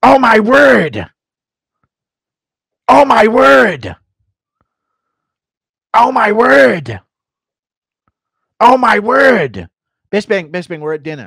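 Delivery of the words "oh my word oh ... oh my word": put-on confused fighter voice, higher and louder. Doing a requested impression of a confused fighter: Michael Bisping with Alzheimer's impression. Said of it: "Bisping with Alzheimer's impression".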